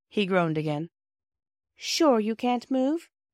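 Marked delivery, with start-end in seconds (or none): 1.7-3.0 strange, odd tone with raised pitch. Bobby, winding rope around the tied-up Peter, questions him in a rather strange tone. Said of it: "asked Bobby in a rather strange tone".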